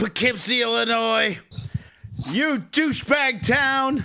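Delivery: slow, drawn-out, taunting delivery. Imagining a wrestler coming out to insult a town: The Rock voice. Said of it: "imagining Rock coming out and going".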